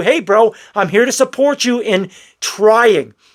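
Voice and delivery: normal talking voice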